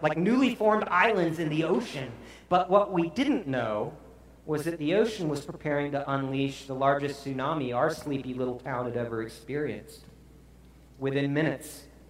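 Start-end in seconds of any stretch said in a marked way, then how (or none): none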